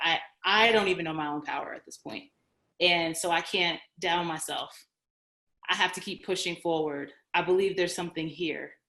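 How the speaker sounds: usual speaking voice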